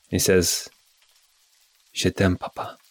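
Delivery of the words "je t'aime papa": soft, hushed, breath-only whisper. Voicing a son who whispers a farewell to his father: whispering. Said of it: "And then he whispers".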